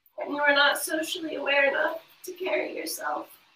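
tearful, crying through the words. Struggling to say hard words aloud, crying while speaking. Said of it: "I'm already crying".

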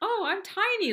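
a high-pitched, delighted, thrilled tone. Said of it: "it made me feel really good".

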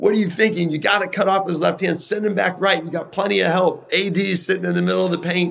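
put-on shrill scolding yell, very high pitch. Recalling an All-Star game, retelling yelling at a player. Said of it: "I'm yelling at Kevin".

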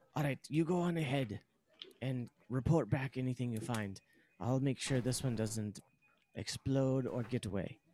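hushed whisper. Voicing a character in the group's game, the speaker is whispering. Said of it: "Theridan whispers".

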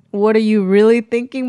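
ordinary talk

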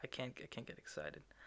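very soft, restrained, hushed voice with volume held down.

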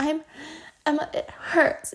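put-on slow, whiny, dramatic little-kid voice. Retelling how a three-year-old sister complains dramatically: imitating a dramatic toddler. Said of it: "the biggest drama queen I know".

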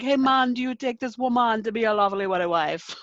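put-on Jamaican accent. Speaker retells what was said at his Antigua wedding, in a put-on Jamaican accent. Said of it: "but they sounded Jamaican".

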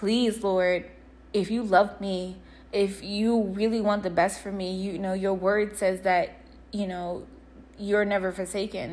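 ordinary talk

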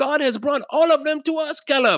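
acted, very high, thrilled, excited outburst.

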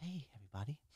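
hushed, serene, soft and calm voice. Imitating a castmate whose voice is like calm itself: imitating Niamh's calm voice. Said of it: "if Cam had a voice, that's what she's".

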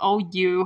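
put-on laughing-it-off voice. Retelling a scene where a character laughs at being beaten: imitating someone laughing it off. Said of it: "laughs about it".

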